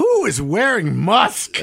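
put-on scornful tone. Retelling the English teacher's question in high school, imitating a disdainful voice. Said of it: "with disdain in her voice".

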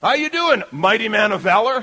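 dry, teasing sarcasm. Retelling a messenger greeting a hiding man: imitating a sarcastic greeting. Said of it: "Sarcasm from the Almighty".

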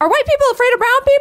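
very high, bright, cheerful, chipper shout. Retelling a question he yelled as the subway train opened: retelling a chipper yell. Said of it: "in this very chipper voice".

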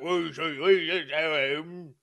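slow, gruff growling voice. Repeating the trailer line: Russell Crowe voice. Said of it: "my Russell Crowe voice for when he's like".

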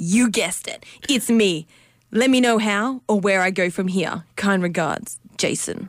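smug, cocky, full-of-himself ego voice. Reading out an email from a man named Jason, in Jason's ego voice. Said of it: "read it out in Jase's... ego voice".

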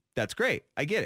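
ordinary talk, nothing marked

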